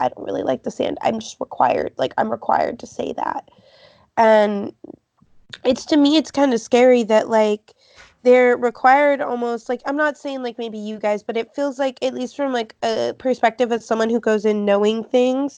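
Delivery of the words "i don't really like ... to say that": hushed, secretive, leaned-in whisper. Quoting a woman who leaned in close to the speaker: retelling a whispered aside. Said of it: "leaned in and whispered".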